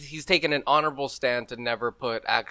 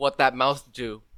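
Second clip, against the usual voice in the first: ordinary talk, nothing marked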